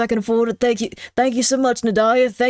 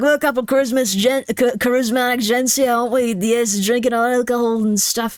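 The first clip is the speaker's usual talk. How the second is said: clumsy, failed put-on Irish accent. Imitating ghost hunters on their channel: bad Irish accent. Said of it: "I can't do an Irish accent".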